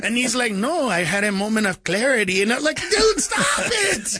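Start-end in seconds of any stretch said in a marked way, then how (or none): 0.5-2.4 put-on thick, heavy Latin American Spanish accent. Speaker retells what their dad said to them, imitating dad's thick accent. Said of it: "he's got really thick accent".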